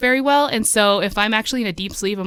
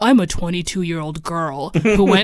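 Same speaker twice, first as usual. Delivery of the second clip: put-on very deep, lower voice; 4 semitones lower than usual. Retelling a story channel's voice actor reading a line: imitating a very deep voice. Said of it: "the deepest voice I've ever heard".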